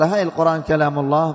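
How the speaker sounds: plain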